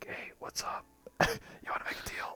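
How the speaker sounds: very quiet, soft, breathy whispered patter. Showing how the sociable game character they made must always talk, whispering. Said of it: "I just have to whisper all the time, like".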